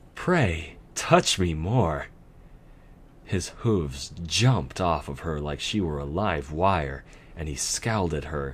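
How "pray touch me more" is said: lightly playful, slow, teasing. The nightmare answers the stallion working on her legs, playful. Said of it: "she said playfully".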